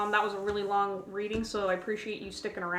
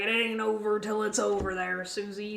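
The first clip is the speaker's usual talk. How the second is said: gruff, rough put-on cowboy voice. Relaying a voice the speaker says they are hearing, in a gruff cowboy voice. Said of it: "really gruff like cowboy voice".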